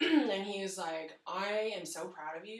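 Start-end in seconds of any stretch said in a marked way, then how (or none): none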